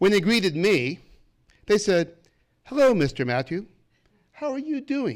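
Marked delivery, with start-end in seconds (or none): 2.6-5.2 put-on posh, very proper British accent, pitched up. Recounting how some men greeted him, the speaker quotes them in a very proper British accent. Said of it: "with a very proper British accent".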